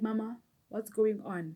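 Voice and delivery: ordinary talk, nothing marked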